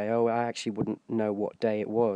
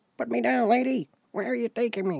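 tiny, very high, squeaky little person voice; 12 semitones higher than usual. Speaker repeats a line from his bit, this time in a midget voice. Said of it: "did you notice I did a midget voice for that one?".

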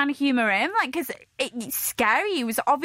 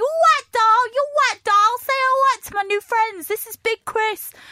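put-on very high-pitched Essex accent; 11 semitones higher, 7 dB louder than usual. Retelling what a man kept saying when he rang his mum, essex accent. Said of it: "it's an Essex accent".

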